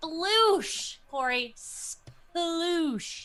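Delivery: insistent, punchy calling out, repeated. Telling another player the code word again: yelling. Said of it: "Stop yelling it".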